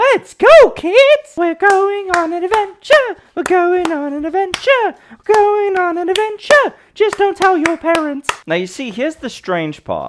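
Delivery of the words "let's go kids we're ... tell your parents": very high, deliberately annoying put-on voice. Acting out someone addressing kids about going on an adventure, in a highly irritating put-on voice. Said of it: "doing a highly irritating voice".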